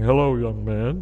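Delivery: deep, big, theatrical, dramatic preacher voice. Speaker retells a man named Phil greeting him, imitating Phil's preacher voice. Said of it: "he had this big dramatic thing".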